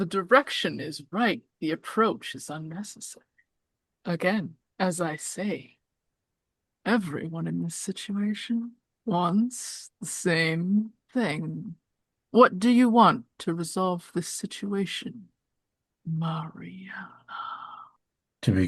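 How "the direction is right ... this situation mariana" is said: cryptic, creepy coyote spirit voice. The coyote spirit answers Mariana in a creepy coyote spirit voice. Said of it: "He he kind of gives you a little toodaloo wave and then just vanishes. I'm kind of imagining Mad Pierrot from Cowboy Bebop. He's just like a creepy man. He's creepy, but he also gives off like could b".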